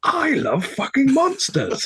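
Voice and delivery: put-on very loud, very high-pitched, shrill drunken shouting. Telling a bar story, acting out what Zoe proclaimed: imitating drunk Zoe, loud. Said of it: "a very drunk Zoe in a very loud voice".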